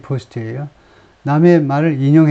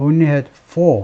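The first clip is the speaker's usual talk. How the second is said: heavy stress on four rather than only. English lesson reading only had four aloud: stress on four. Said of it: "only를 강조해서 읽는 게 아니고 for를 강조해서 읽으면 돼요".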